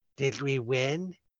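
feeble, barely-there, very weak and soft voice. A narrator voices a wounded man asking the player, in a very weak voice. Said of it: "And very weakly".

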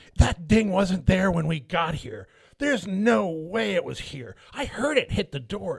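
indignant, accusing, entitled scolding voice. Retelling a dispute over a door ding, imitating a woman yelling at his wife, Karen voice. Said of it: "That was a good Karen voice".

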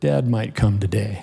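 feeble, frail, barely-there, really weak voice. Retelling what he said after opening his eyes, imitating a weak voice. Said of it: "in a real weak voice".

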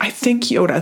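acted tearful voice. Retelling what was said to a husband: imitating own crying. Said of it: "literally crying to my husband".

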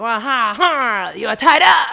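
very loud, very slow, booming, drawn-out strongman boasting. Describing role play for when the person comes in, playing super strong. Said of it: "role play that you're super strong".

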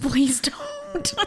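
mock very high, pleading whimper. Retelling how Chet begged while clawing at someone's arm, imitating Chet whimpering. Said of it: "like whimpering".

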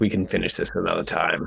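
quiet mutter under the breath. Retelling what they muttered during a fight in a game, under the breath. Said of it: "I kind of like say under my breath".

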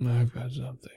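low, soft voice. A character answers a call for a bright light, really low and soft. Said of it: "really, really low and soft".

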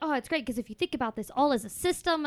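put-on keen, excited, eager, carried-away tone. Retelling what Jamie said about the system: imitating Jamie getting excited. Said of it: "He got so excited".

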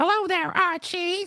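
very high-pitched sitcom housewife voice. Answering a $5 request read out, speaking in an Edith Bunker voice. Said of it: "In my Edith Bunker type voice".

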